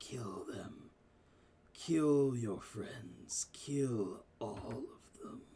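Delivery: low, crazed, creeping mad whisper. A game master voices the whisper flowing into Nerissa's mind, a mad whisper. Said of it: "all you hear is this mad whisper".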